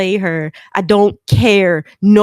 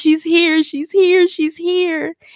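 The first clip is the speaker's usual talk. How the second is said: put-on tearful shouting, higher pitch; 9 semitones higher than usual. Retelling what was said to a best friend who asks what's wrong: retelling loud crying. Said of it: "use your inside voice".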